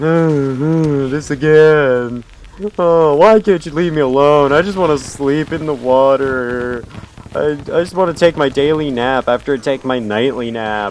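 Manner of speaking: put-on woeful voice with drawn-out oohs. Voicing the game boss he keeps beating: voicing a boss sounding sad. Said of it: "he sounds so sad".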